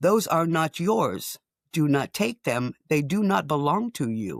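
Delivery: clipped, curt, terse voice. Retelling a voice in your head as you lean to pick up a bulb; clipped voice. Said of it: "In that kind of clipped voice".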